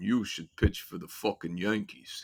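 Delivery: low, deep, flat, level deadpan monotone drone. Retelling a performer's comeback to a fan who threw toilet paper, deep monotone voice. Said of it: "in that deep monotone voice".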